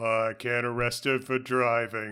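put-on, matter-of-fact deadpan voice. Describing a character's brief line, the speaker imagines it voiced: Jonathan Banks deadpan. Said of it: "I heard in my head Jonathan Banks saying".

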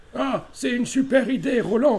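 put-on voice, pitched very high. Telling an anecdote about a guy, imitating how that guy talked. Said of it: "le mec parlait comme ça".

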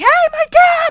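very high, shrill, sudden, loud shout. Acting out Ricky calling for help for his dad, retelling a shout. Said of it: "just starts shouting".

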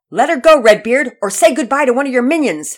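fearless shout, high and very loud. Pearson, holding a pirate at dagger point, shouts at redbeard fearlessly. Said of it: "Pearson shouted at Redbeard without an ounce of fear".

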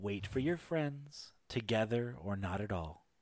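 seductive, sultry half-whisper, soft and close. Voicing a figure who leans down to a player's ear: sultry half-whisper. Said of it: "whispers into your ear, uh, with the sultry nature in Elven".

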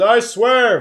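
shouted loudly. Voicing a cat swearing an oath in court, very loudly. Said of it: "very loudly".

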